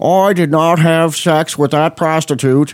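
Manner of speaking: slow, posh, upper-crust Boston drawl. Talk show host tries out an accent on the show, in a Kennedys Boston accent. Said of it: "put a little bit of Boston accent in there and turn it into the Kennedys".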